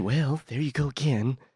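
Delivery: slow, drawn-out, dumbed-down voice. Explaining a comparison between two presidents: Ronald Reagan impression. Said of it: "You take Ronald Reagan".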